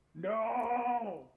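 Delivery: very high, loud, stretched-out guttural cry. Voicing a character who sees a curse land: loud guttural yell. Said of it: "this loud guttural yell of just".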